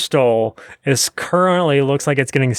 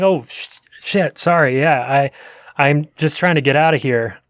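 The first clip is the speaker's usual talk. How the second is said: flustered, stammering, apologetic. Game narrator voices people caught out, trying to leave: flustered apology. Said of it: "they're like".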